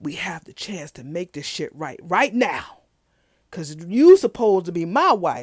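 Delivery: loud put-on whisper. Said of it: "they whispering, like, loud".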